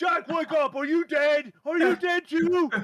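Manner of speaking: piercing, very loud, high-pitched shout. Voicing a character waking Jack on a beach: shouting in character. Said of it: "And he's shouting".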